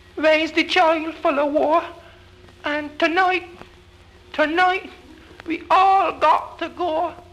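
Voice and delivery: small, very high-pitched little voice. Narrator reading a woman's words as she looks up at the sky, in a little high voice. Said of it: "saying in she little high voice".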